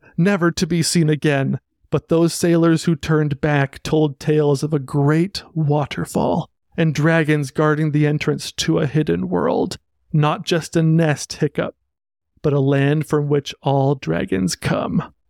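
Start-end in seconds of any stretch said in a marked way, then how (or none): none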